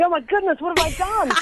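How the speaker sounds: panicked, freaking-out outburst, voice shooting very high. Retelling getting an official call from the foreign office, retelling own freaking out. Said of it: "I'm like freaking out".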